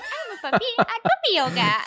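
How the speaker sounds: very high, very loud, funky, swooping puppy voice. Describing a creator who films a puppy at puppy yoga, in a funky puppy voice. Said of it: "put like a funky voice on it".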